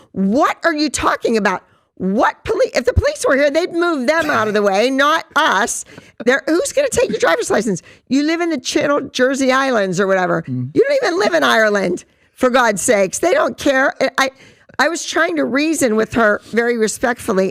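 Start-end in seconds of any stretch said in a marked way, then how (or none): 0.1-13.9 worked-up, heated, screaming voice. Speaker retelling yelling at a woman from the back of a station wagon, retelling screaming at a woman. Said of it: "And I'm screaming at this woman".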